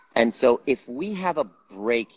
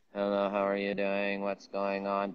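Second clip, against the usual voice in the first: soft, flat, dissociated monotone. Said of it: "the prosody of it versus".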